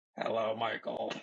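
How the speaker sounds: mechanical electrolarynx voice-box voice. Imitating a woman with a trach greeting someone, doing an electrolarynx voice impression. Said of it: "That wasn't even a very good impression".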